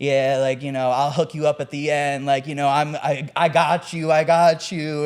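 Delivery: mock high and mighty cocky voice. Retelling how bar customers act at the bar: imitating a high and mighty customer. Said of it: "walk up to the bar, like, all high and mighty".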